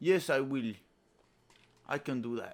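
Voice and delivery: thick Russian accent, loud and high-pitched. Speaker demonstrates how he wants Red Guardian to sound, thick Russian accent. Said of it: "really thick Russian accent too".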